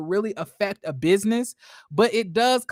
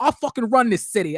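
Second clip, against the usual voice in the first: put-on accent slipping into British; 3 dB louder than usual. Critiquing an actress's accent, quoting her line slipping into a British accent. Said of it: "she almost started to break into that British accent".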